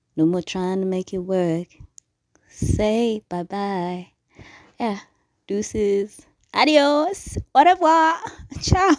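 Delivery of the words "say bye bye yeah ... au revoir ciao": gleeful sarcasm, high-pitched and drawn out. Leaving behind something that never worked, saying goodbye, sarcastic and happy farewell. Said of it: "There's so much sarcasm and happiness in this".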